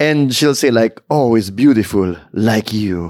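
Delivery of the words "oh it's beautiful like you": put-on Italian accent, pitched low. Quoting what the woman on an online account says; italian accent. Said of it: "with her Italian accent".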